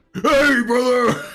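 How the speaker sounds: very high, loud, belted gym-bro voice. Describing a guy as the Borderlands 2 character Tor, then doing Tor voice from Borderlands 2. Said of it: "I'll have to get ready for that fucking voice".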